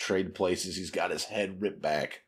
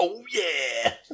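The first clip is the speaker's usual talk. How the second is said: high, loud booming bellow. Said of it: "A Kool-Aid man's out of the water".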